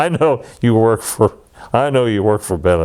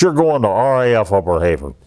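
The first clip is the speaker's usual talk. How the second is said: mock-angry, acted-out authoritative voice. Retelling how a superior announced the assignment, imitating an angry superior. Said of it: "he's really mad".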